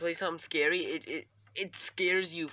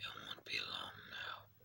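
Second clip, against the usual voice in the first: demon character voice; 14 dB quieter than usual. Playing a game, the speaker talks as a demon in a demon voice. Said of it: "I could do a different demon voice, but I like this one most".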